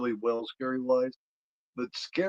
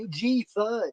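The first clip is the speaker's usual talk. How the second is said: high, teasing, jeering, mocking taunt; 9 semitones higher, 3 dB louder than usual. Retelling a sketch where he makes fun of her: imitating someone making fun. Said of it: "you can hear him making fun of her".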